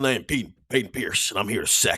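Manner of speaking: put-on Texas accent. Wearing the hat so people know it, a speaker uses a put-on Texas accent. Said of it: "You have to talk in a Texas accent".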